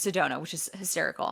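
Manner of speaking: normal talking voice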